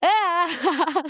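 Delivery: mock crying sound. Retelling pretending to cry like mom as a child: imitating fake crying. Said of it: "pretending to cry like my mom".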